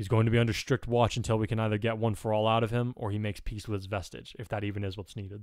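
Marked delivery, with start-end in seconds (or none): none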